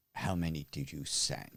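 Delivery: low, quiet, hushed, faintly menacing voice. A game narrator voices Ulrich speaking to Goshawk, in a very quiet, semi-menacing voice. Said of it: "says in his very quiet but semi-menacing voice".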